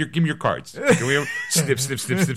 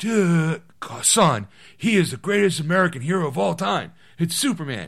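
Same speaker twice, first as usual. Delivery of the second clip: put-on sleepy voice; 3 semitones higher than usual. Acting out a dad explaining a son's name: Keanu Reeves voice. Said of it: "I don't know why I sound like Keanu Reeves".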